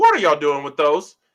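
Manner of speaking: loud yell. Retelling confronting two people who brought tag belts: imitating own yell. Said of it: "I yelled".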